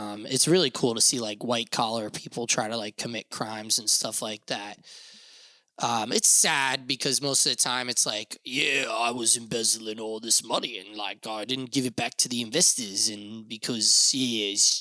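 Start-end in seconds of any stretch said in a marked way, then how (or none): 8.4-13.1 slight put-on Australian accent creeping in. Imitating an embezzler on American Greed: slipping into an Australian accent. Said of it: "turns into a wee bit of a wanker Australian accent".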